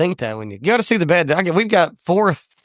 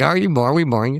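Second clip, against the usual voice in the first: ordinary talk, nothing marked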